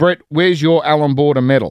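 ordinary delivery

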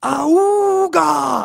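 high, loud, creaky war cry.

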